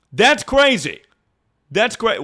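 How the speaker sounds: high, mock shouting, cut off mid-word. Ranting that an election result was crazy, yelling. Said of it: "why are we yelling?".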